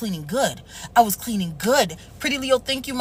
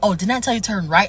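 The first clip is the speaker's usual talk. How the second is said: put-on slick, sly tone; 2 semitones lower than usual. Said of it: "he trying to be slick".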